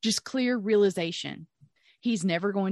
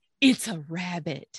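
slow, drawn-out, theatrical and dramatic delivery; 3 semitones lower than usual. Retelling a dream, quoting the midwife: imitating a slow dramatic reveal. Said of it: "turns around very slowly, very dramatically".

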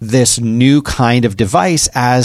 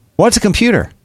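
acted, very high, offhand, casual nonchalance; 10 semitones higher than usual. Retelling an ad's ending where the girl answers: imitating a nonchalant reply. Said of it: "in a very sort of nonchalant way".

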